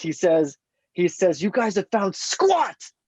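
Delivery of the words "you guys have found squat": high, slow angry yell. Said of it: "in such an angry mode".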